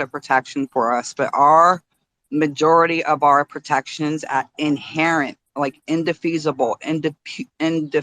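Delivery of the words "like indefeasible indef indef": stumbling and restarting, stuttering over indefeasible. Explaining inherent constitutional protections, the speaker stumbles on a long word, stuttering. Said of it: "I'm stuttering a little bit".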